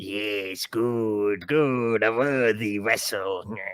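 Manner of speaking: very slow, weird, low voice. Retelling a game's opening, voicing a voice from nowhere: weird voice. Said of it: "this weird fucking voice out of nowhere".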